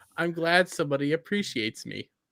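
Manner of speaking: ordinary talk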